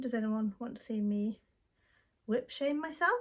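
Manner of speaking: ordinary delivery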